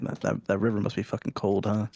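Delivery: half-voiced, put-on stage half-whisper. In character, leaning over to another character: half-whispering in character. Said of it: "I lean over, whisper to, whisper to Talia".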